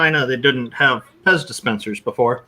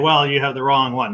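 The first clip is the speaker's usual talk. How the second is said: ordinary talk, nothing marked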